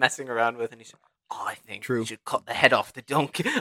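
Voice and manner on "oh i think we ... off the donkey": put-on half-Australian accent in a thug voice. Acting out a robber proposing a plan: semi-Australian goon voice. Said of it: "semi-Australian goons".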